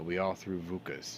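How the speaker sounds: ordinary talk, nothing marked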